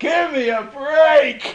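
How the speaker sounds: shrill, drawn-out, very loud, high-pitched yell. Retelling how a man answered audience criticism; retelling him getting louder. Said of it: "he got louder".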